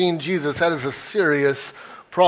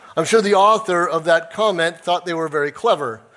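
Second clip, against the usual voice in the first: ordinary delivery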